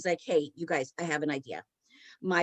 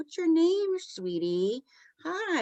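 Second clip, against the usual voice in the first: put-on slow, very high-pitched baby talk; 10 semitones higher than usual. Retelling a medium speaking to a child spirit: imitating talking to a young child. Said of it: "talking in a tone like you would, you know, you know, talking to a young child".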